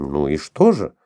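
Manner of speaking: increasingly thrown. A woman repeats her question to a man who keeps staring at her, increasingly flustered. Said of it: "все больше теряясь".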